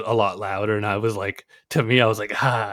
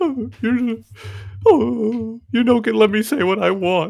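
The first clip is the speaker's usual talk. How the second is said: mock whiny, self-pitying voice, higher; 12 semitones higher than usual. Imitating the other speaker acting like a victim: imitating someone playing the victim. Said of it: "You play the biggest victim".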